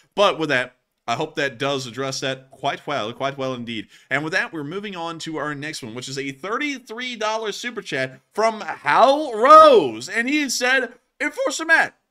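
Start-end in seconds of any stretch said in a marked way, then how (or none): 11.2-11.9 voice breaking, higher and louder. Reading out a chat message aloud, with a voice crack. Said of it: "voice crack right there".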